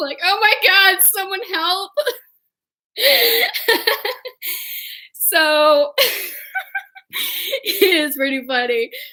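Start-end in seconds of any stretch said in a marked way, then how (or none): 0.2-1.9 high, crying, pleading voice. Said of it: "I just started crying".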